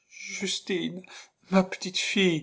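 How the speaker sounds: trembling, quavering cry, very high-pitched. Reading a story aloud, the narrator gives a character's call to a child, quavering. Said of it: "appela d'une voix chevrotante".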